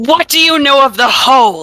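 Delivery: hostile, confrontational, loud, aggressive tone. Questioning a room of strangers in character: loud aggressive demand. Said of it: "I say to everybody, loudly, aggressively".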